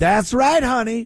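very high-pitched, affected, put-on dialect voice. Mocking a politician who puts on a dialect: imitating Jasmine Crockett's put-on dialect. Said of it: "We've seen Jasmine Crockett do this".

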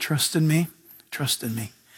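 still, small, soft, gentle, hushed quiet voice. Acting out the Lord answering the thrashing: imitating a still small voice. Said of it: "It's the still, small voice".

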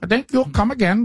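thick Indian accent. Showing another speaker how to do the accent, in a very thick Indian accent. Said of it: "with a very thick Indian accent".

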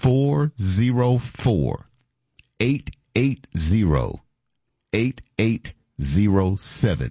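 deliberately very slow pace. Radio guest giving listeners the station phone number, very slow. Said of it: "I'm going to give you the phone number real slow".

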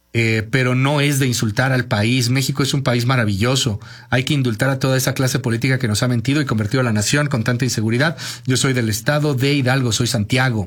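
normal talking voice

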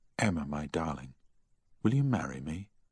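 plain

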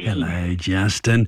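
very deep, low grandfatherly voice. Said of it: "You sound like a grandpa when you said that".

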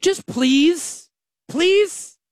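shrill, high, begging plea. Asking listeners to come check out the company: mock begging and pleading. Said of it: "I'm, like, begging and pleading".

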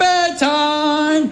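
playful call, popped out high.

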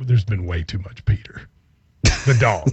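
hushed whisper. Talking to Drew from a place where he has to whisper; whispering. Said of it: "I'm gonna have to whisper this".

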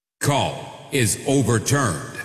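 big, booming voice. Announcing that the call is overturned: big voice. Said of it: "big voice guy".

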